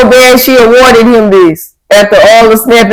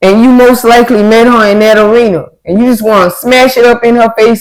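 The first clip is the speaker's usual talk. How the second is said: plain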